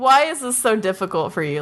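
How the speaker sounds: usual speaking voice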